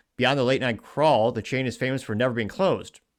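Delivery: normal talking voice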